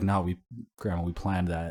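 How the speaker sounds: ordinary talk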